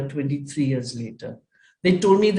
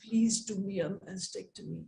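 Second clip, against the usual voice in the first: mock hushed, very quiet, imploring pleading tone; 3 semitones higher, 13 dB quieter than usual. Retelling kneeling down and begging a doctor: imitating her own begging. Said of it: "I got down on my knees and I begged him".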